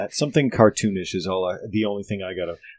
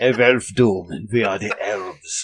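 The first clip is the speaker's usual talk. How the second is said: put-on German accent. Proposing how the elves of their kingdom should talk, in a German accent. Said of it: "they definitely speak with German accents now".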